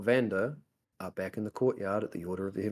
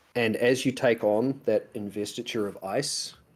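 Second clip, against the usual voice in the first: ordinary talk, nothing marked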